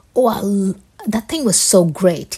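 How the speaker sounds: sarcastic, dripping irony, slow swooping delivery. Showing an example of talking with irony: sarcastic tone. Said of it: "a lot of sarcasm and irony".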